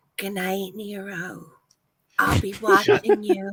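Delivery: slow, drawn-out stage half-whisper. Voicing a character saying good night to Nero: half-whispering in character. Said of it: "I'm just gonna whisper".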